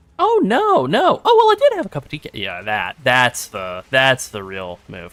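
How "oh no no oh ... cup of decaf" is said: fast, sing-song, dizzy, forgetful, scatterbrained voice. Acting out how Mom would answer about having coffee, imitating a scatterbrained mom. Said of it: "she's not that scatterbrained".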